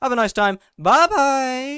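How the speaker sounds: shrill, very high, loud voice crack. Saying goodbye at the end, with the voice cracking. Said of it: "voice crack".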